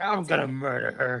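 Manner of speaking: furious, fed-up, angry delivery. Retelling how the Tin Man in the new movie talks: imitating an angry Tin Man. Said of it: "he's pretty pissed".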